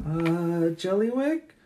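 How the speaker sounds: calling out. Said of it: "and she's like".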